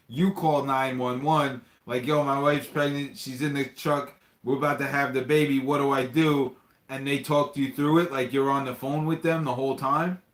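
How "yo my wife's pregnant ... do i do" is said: usual speaking voice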